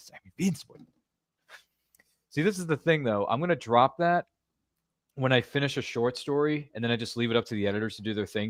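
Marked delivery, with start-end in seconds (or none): 0.0-0.8 breathy, breathed-out whisper. Retelling saying a Boris one-liner at work: Boris one-liner impression. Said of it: "see, there it is again".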